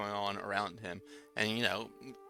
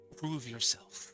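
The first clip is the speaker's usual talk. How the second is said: gentle, soft, calm creature voice; 4 semitones higher than usual. Narrator voicing a stag heard in the listener's mind, soft calm creature voice. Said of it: "the calm voice from this creature".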